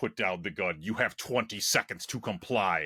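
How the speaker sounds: low, menacing, threatening deep robot voice. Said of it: "in this menacing deep voice".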